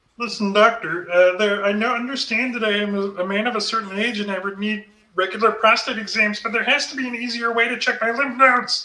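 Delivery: high frog puppet voice. Trying a Kermit voice on request. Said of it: "let's see if I can do the Kermit voice now".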